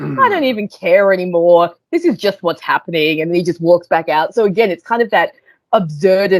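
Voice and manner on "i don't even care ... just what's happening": ordinary talk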